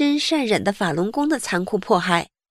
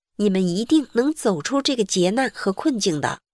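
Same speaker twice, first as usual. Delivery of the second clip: ordinary talk, nothing marked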